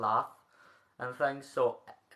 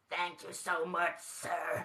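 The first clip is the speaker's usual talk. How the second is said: soft, hushed, a little high cartoon voice; 5 semitones higher, 5 dB quieter than usual. Thanking the quiz contestants: sounding like Roz from Monsters, Inc. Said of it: "You sounded a little bit like Roz from Monsters".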